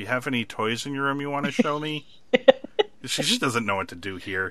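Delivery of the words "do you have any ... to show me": mock eerie, unsettling voice, pitched up. Telling a story, speaker quotes a woman talking to a man's kid: imitating a creepy tone. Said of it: "very creepily for Jessica".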